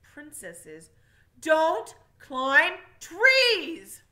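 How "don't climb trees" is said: thunderous, booming, very loud, very slow roar. A narrator voices a king answering a princess who defies him, thundering. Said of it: "thundered the king".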